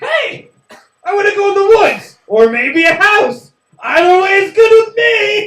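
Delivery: very high, loud creature voice. Doing your favorite impersonation, speak in a Deer Man impersonation. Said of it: "my favorite impersonation of Deer Man".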